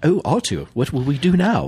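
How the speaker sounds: deliberately bad put-on robot droid voice. Showing a co-host that even a bad C-3PO voice includes arms up. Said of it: "Even my bad C-3PO voice includes the arms up".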